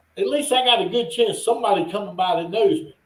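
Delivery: normal talking voice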